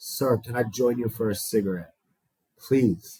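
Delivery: mock-meek, timid, childlike pleading voice. Retelling how he asked a man for a cigarette, imitating a timid plea. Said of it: "like a 3-year-old kid, no courage, no confidence".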